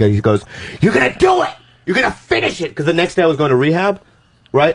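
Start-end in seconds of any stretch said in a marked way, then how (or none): 0.8-2.7 mock screeching, very high, furious screaming. Retelling a producer's angry order after a failed take: imitating a producer screaming. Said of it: "starts screaming at me".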